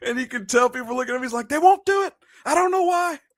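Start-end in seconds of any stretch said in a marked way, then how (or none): 1.5-3.2 exasperated, high, frustrated yell. A speaker retelling David's answer to their question, imitating David yelling. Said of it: "And he just is yelling".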